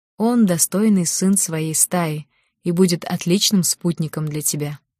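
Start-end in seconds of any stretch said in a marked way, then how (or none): none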